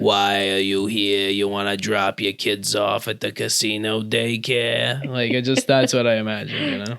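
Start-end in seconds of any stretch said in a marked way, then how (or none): 0.0-5.0 put-on old lady character voice. Imagining a casino daycare worker: old woman from Monsters, Inc. voice. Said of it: "like a human version of the old woman from Monsters, Inc".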